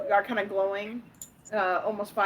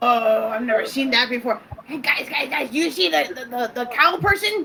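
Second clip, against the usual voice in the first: excitable, excited, eager goblin voice; 3 semitones higher, 4 dB louder than usual. A goblin wizard spots a minotaur in the camp and tells friends: excitable little goblin. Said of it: "[name], the Goblin Wizard who really like to light things up .. / A very excitable little green goblin. Her with green hair at the moment because she's happy. And though I'd say like the very tips of".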